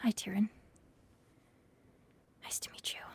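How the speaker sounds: private aside, said quietly to herself. Voicing a character practicing a greeting alone: soft voice under her breath. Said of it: "just softly under her breath to herself".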